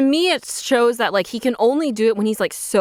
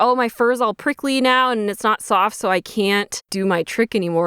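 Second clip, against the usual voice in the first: plain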